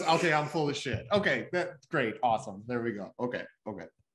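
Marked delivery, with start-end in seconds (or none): none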